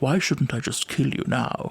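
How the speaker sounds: deep, gentle voice with a soft Scottish lilt. Quoting a villain's line that sounds like Gordon Brown: Gordon Brown voice. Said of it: "Sounds like Gordon Brown or something".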